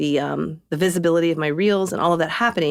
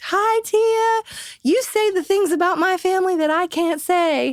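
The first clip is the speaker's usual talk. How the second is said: put-on thickly laid-on country accent, high and slow. Retelling a surprise phone call from Amy Duggar, in an Amy Duggar country accent. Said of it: "she's had a really country accent".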